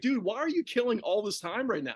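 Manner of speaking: ordinary talk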